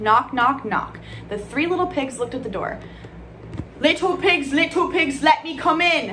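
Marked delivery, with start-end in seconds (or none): 3.8-6.1 very slow, high, loud, drawn-out hollering. The wolf at the door calls to the three little pigs: yelling. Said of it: "yelled the wolf".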